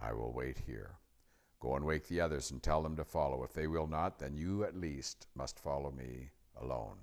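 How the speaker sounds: ordinary delivery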